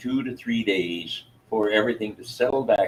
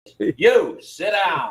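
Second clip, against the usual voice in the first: stern, strict teacher voice, pitched up; 8 semitones higher, 4 dB louder than usual. Asked to speak louder, showing a teacher voice: teacher voice. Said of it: "I'll use my teacher voice".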